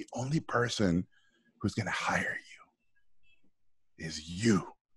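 kind of whispered, soft, close, low-key half-whisper. Retelling a producer's advice behind a closed door: imitating a whisper. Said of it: "he kinda whispered it".

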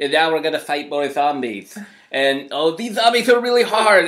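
put-on childish lisp, kid voice. Mocking a kid doing a Let's Play on YouTube; imitating a lisping kid gamer. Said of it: "some like kid with a lisp who's like".

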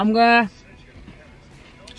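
talking with mouth full of food, chewing. Mid-sentence, the speaker keeps talking while eating a cereal bar. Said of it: "I'm just eating a cereal bar".

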